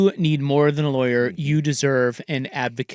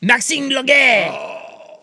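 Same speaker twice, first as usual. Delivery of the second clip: very high, overdone, exaggerated French accent; 10 semitones higher than usual. Repeating a basketball player's name excitedly: mocking French accent. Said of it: "the racist French accent that we just did".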